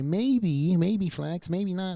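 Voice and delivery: very slow, drawn-out, high, coy dithering voice. Teasing a podcast guest about how he asks questions: Evan impression. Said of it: "that's my Evan impression".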